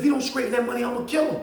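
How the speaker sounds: put-on really angry, menacing Philly accent. Retelling what an angry man said to him, imitating an angry philly accent. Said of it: "he done got his Philly accent and he really mad".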